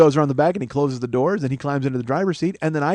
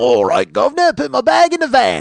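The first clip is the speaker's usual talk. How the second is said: bad, over-the-top put-on Cockney accent, sing-song; 10 semitones higher, 7 dB louder than usual. Imitating how a woman talked, admitting being unable to do accents: bad Cockney accent. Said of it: "I can't do accents".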